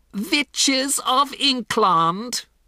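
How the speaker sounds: shrill, very high shrieking shout. A witch addresses her audience of witches, shouted. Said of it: "shouted the Grand High Witch".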